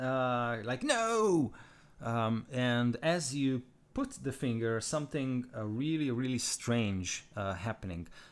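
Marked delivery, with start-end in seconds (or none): 0.8-1.5 shrill, very high in-character shout. Voicing a character who refuses to surrender: shouting no in character. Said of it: "he shouts".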